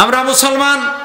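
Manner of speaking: loud, high-pitched simple-minded fool voice.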